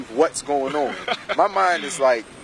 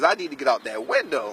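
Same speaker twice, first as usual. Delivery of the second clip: ordinary delivery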